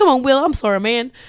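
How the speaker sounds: put-on American accent. Retelling a movie fight scene between paramedics: bad American accent. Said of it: "I'm sorry, I'm not good with accents".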